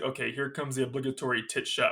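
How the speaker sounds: ordinary talk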